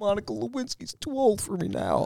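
heavy-breathing put-on voice, soft, slow, low-volume, swooping. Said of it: "The breathing is the worst part".

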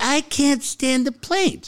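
put-on high elderly woman's voice. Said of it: "he did the old lady voice".

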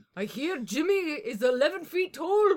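very loud, high, booming Scottish accent. Joking with the others before a challenge, in a Scottish Braveheart accent. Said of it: "What's the accent?".

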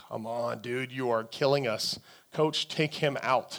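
acted muttering under the breath. Retelling his son's game, a parent re-enacts what he said to his wife, muttering under breath. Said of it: "I believe I muttered that under my breath to my wife".

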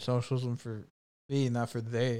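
slow, angry grumbling mutter under the breath. Imitating a politician muttering a slogan under her breath: imitating angry muttering under breath. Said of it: "under her breath, just angrily the whole time".

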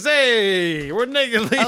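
imitated Brooklyn accent. Telling a made-up story, voicing dancers from brooklyn: put-on brooklyn accent. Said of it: "We're from Brooklyn, and we talk like this".

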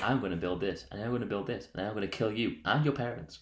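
soft, flat, quiet one-note monotone. Describing a movie, quoting a character in a Marlon Brando monotone impression. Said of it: "in an entire, like, monotone, same voice".

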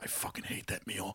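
muttered under the breath. Retelling how her sister reacted to the meal, muttered under her breath. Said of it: "she just under her breath goes".

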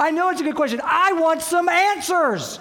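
loud, high-pitched female yell. Retelling a conversation on a plane, imitating a woman yelling. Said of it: "She literally yells at me on the plane".

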